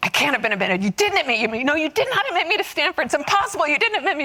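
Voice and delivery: repeated, shouted, disbelieving scream. Acting out how he screamed over the phone, retelling his screaming. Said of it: "I hear him screaming so hard".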